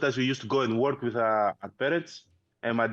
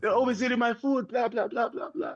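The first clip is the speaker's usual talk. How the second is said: put-on crying, complaining voice, higher; 11 semitones higher than usual. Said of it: "we started crying, like".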